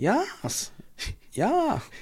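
"yeah" said high as a German-accented ja. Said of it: "Don't know why I went German there".

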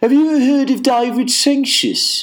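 put-on Birmingham accent pitched very high. Retelling a stranger's question from a car window in a Brummie accent. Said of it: "in a Brummie accent".

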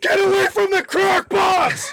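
shrieked, very high pitch, very slow and drawn-out. Acting out swinging a bag around in an imagined fight: screaming. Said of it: "and I'm just screaming".

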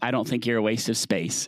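ordinary delivery

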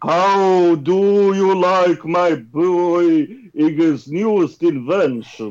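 put-on vampire voice with Russian accent. Reading Bowser's lines in a group story reading: Bowser as a Russian vampire. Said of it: "Russian vampire".

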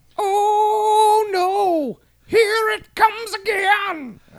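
very high, loud, slow mock wail of dread.

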